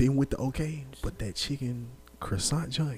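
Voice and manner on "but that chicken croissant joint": quiet, hushed tone. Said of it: "But why you whispering?".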